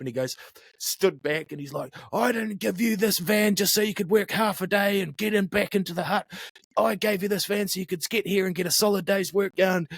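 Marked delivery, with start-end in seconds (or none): 2.1-9.9 play-acted furious scolding rant, pitched up. Retelling what an angry orchard owner said when he slid the van door open: imitating an angry rant. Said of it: "he was all angry".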